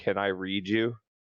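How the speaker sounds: gentle, tender, delicate delivery. Asking a relaxed living book if it can be read: asking very quietly. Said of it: "I ask very quietly".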